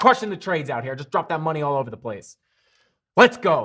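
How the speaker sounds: excited, fired-up, pumped hype cheering. Cheering on viewers making trades, fired up. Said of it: "Sorry, I'm getting fired up".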